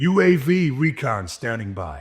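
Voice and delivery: very slow, drawn-out speech in an American accent. Voicing Ghost's lines, but as an American Ghost: American-accent Ghost voice. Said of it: "As Ghost, but an American Ghost".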